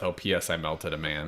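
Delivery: very quiet, low mutter under the breath. Suggesting a character's quick catch-up line to the others: muttering under his breath. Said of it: "he might mutter under his breath".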